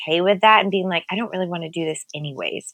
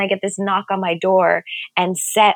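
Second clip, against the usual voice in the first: normal talking voice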